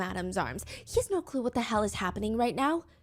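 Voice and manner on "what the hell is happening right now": ordinary talk, nothing marked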